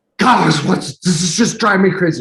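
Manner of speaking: acted-out mock screaming. Recounting storming into the listener's office months ago, retelling own screaming. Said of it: "I came screaming into the office".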